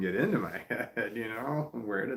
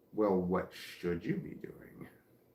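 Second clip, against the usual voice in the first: condescending, near-whispered, hushed, talking-down voice; 3 semitones lower, 5 dB quieter than usual. Describing what one voice keeps asking, the speaker puts on a mock-condescending tone. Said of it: "It's real condescending tone".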